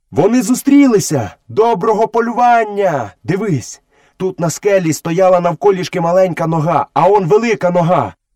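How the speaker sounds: high, eager, excited shout. Mowgli, tracking with the panther Bagheera, calls out what he has found; excited shout. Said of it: "закричав".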